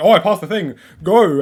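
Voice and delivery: loud, frantic, panicked outburst. Retelling own thoughts while playing a level: imitating own panic. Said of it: "I'm panicking. I'm like".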